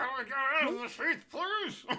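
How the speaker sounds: muffled, mumbled delivery. Voicing a sword stuck inside its sheath: muffled mumbling. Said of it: "your mumbling was too good".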